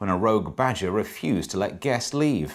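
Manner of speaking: ordinary talk, nothing marked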